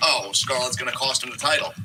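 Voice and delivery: normal talking voice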